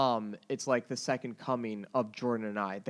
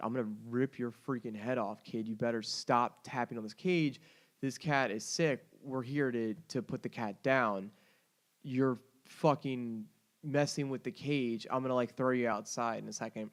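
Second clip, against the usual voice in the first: usual speaking voice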